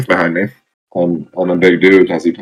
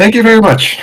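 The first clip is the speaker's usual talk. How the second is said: very high, forced sweet politeness with a snarl; 3 dB louder than usual. Speaking as a character at a service desk: snarling customer service smile. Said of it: "customer service smile ... full blown teeth, teeth snarling".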